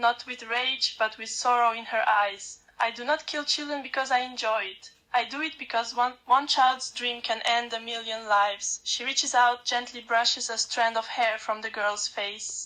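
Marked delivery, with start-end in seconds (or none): none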